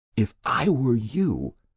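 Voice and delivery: hushed whisper. Reading a story, a man speaks to Detective Chief Inspector Jessup: whispered. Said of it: "he whispered".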